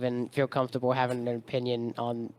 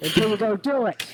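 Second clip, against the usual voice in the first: shouting, higher and louder; 9 semitones higher, 4 dB louder than usual. Urging viewers to pause and go watch the movie: yelling at viewers. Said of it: "I'm yelling".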